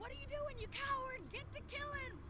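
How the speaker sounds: high-pitched, shrill scream.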